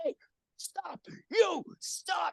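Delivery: put-on whispered, breathy bark, slow and drawn out. Retelling being spotted in the hall, imitating Walter J. Degnan screaming. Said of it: "screaming at me".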